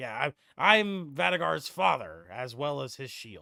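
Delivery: put-on gruff, older dwarf character voice. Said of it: "a dwarven voice, similar to Vadagar's, but older and more gruff".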